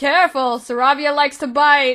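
very loud, high shout. Voicing a character calling across from another table: shout. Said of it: "shouts from the, their table".

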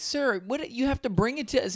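very high, indignant, outraged yelling. Retelling a rental car company's reaction: imitating someone yelling.

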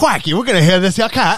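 fake Australian accent pitched high. Just called Steve Irwin by the other speaker, respond with a zombie Steve Irwin impression. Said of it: "what accent was that?".

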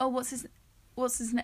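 ordinary talk

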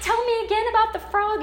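sweet, high, loud doting lady's coo.

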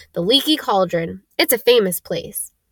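ordinary delivery, nothing marked

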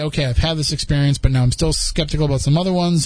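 normal talking voice

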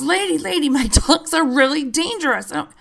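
put-on man's yelling, urgent. Retelling what a man with two dogs yelled: imitating a man yelling. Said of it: "So he yells".

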